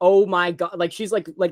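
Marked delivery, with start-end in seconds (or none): 0.0-0.8 stunned, disbelieving, caught-off-guard astonishment. Retelling Jamie Lee Curtis hearing her name announced: imitating Jamie Lee Curtis, shocked. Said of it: "she literally goes like".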